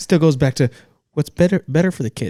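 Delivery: high, loud, insistent mediator voice.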